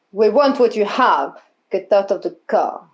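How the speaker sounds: put-on speaking with a Russian accent. Voicing someone speaking from a car: Russian accent. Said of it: "Russian accent?".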